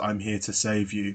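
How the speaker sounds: put-on flat deadpan. Recounting how Syla comes in during the dream scene: mock-deadpan Syla line. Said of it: "in, like, a totally deadpan voice".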